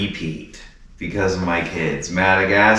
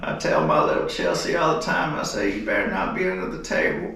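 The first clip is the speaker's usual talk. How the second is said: breathy, half-whispered, nearly whispered voice; 6 dB quieter than usual. Trying out an impression: Bill Clinton impression. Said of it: "Trying to do Bill".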